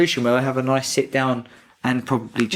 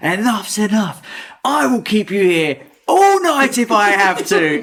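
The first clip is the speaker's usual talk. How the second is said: furious, loud, high-pitched angry rant; 8 semitones higher, 5 dB louder than usual. Retelling a favourite film moment where he kicks off: imitating an angry outburst. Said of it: "he is kicking off in front of me".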